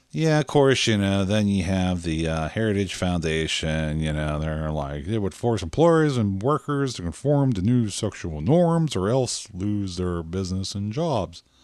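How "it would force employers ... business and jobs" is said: put-on Southern accent. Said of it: "I'm getting the Southern accent all of a sudden".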